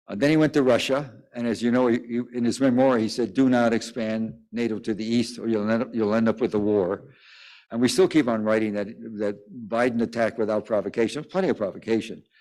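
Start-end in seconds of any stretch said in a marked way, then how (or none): none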